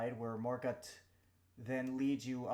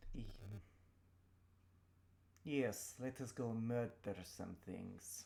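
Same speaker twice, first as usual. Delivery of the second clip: flat, unexcited, lower and quieter; 3 semitones lower, 6 dB quieter than usual. Agreeing in character to another player's suggestion: unenthusiastic. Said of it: "Don't sound so enthusiastic".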